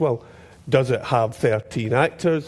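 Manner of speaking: low, solemn grown-up voice.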